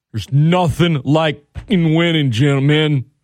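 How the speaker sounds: rousing, rallying pep-talk delivery. Speaker, discussing a team and bettors, breaks into a Dan Campbell impression. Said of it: "I got to work on my Dan Campbell impression".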